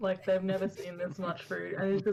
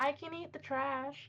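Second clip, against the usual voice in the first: sweet, guileless, pure-toned voice, high and slow; 7 semitones higher, 5 dB quieter than usual. Voicing a guest answering the barkeep: pure sounding voice. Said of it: "with the most pure sounding voice says".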